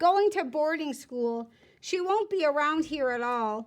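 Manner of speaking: ordinary delivery, nothing marked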